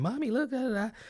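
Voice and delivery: mock screaming kid voice. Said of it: "everybody was screaming, hollering".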